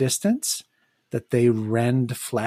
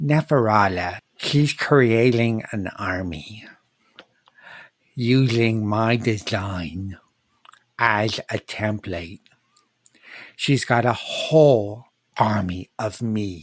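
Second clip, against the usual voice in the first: slow creature voice, lateral lisp slurring s; 3 semitones lower than usual. A game master voices a blunderbeast addressing the party, in a lisping creature voice. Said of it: "A creature I described as a blunderbeast. / he approaches everyone and he insists on joining you in your journey to the dam. / he approaches everyone and he insists on joining you in your journey to t".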